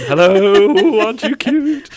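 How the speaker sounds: very high, very loud puppy-talk voice. Talking about an upcoming training, slipping into a talking-to-puppies voice. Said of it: "I almost go into my talking to puppies voice then".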